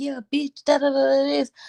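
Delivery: put-on furious cussing rant. Retelling cussing somebody out right before opening the door: imitating own angry cussing. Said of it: "I'm cussing somebody out".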